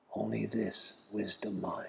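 put-on whisper. Retelling what a lama whispered in the speaker's ear: imitating a whisper. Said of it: "leans over and whispers in my ear".

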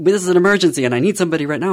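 loud, high-pitched urgent yell. Retelling a call to nine one one for a diabetic partner: retelling a shout at 911. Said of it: "I shouted at them".

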